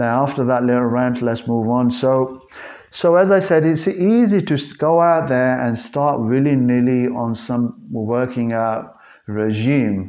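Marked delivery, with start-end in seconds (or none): 9.3-10.1 leaning heavily on the word "regime". Explaining a point to listeners, with emphasis on regime. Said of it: "I emphasize the word regime".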